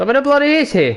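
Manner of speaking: yelling. Speaker checking invited players, asking where one of them is, yelling. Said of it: "forgive me for my yelling".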